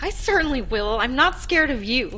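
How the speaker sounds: high-pitched, trembling, shaky exclamation. Andra answers a talking fire, in a high-pitched, shaky voice. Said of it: "she exclaimed in a high-pitched and shaky voice".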